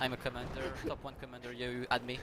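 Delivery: ordinary talk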